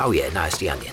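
ordinary talk, nothing marked

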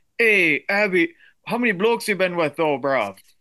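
put-on slangy London lad accent. The speaker addresses another person in the conversation, doing a London boy impression. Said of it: "here's my London Boy impression".

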